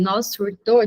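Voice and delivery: ordinary delivery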